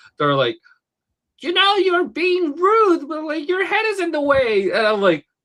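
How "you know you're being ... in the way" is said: pitched way up with a fully entitled attitude. Retelling what the Karen ladies at the show said: imitating an entitled Karen complaining. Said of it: "her and her daughter were like".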